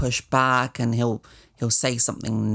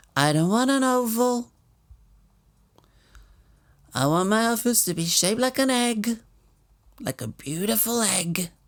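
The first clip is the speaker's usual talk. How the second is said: put-on voice, pitched very high; 9 semitones higher than usual. Imitating the president refusing an oval office: Donald Trump impression. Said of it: "get ready for a great Trump impression now".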